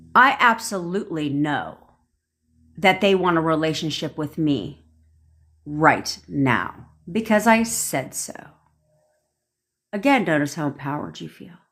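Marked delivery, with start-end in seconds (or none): 0.2-8.4 confident, certain voice with sure conviction. Speaker leading listeners through a statement to repeat, certain tone. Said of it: "Say it with a little bit of certainty in your tone".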